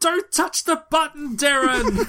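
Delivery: shrill, high, loud shout. Speaker recounts a quiz moment when the questioner yelled at a player, retelling a shout. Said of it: "he shouts".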